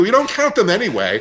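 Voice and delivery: very high-pitched voice, dripping with sarcasm. Answering a remark about excluding nursing home numbers: sarcastic. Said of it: "I say that so sarcastically".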